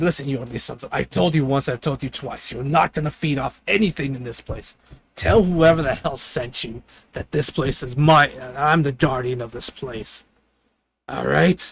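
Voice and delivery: put-on, really gruff creature voice. Voicing a creature that calls itself the guardian of a place, really gruff voice. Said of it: "really gruff voice".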